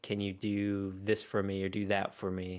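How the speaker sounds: plain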